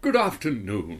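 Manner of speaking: put-on posh, stately royal butler voice. Reading a written-in message as requested, in a royal butler voice. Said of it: "in the voice of a royal butler, please".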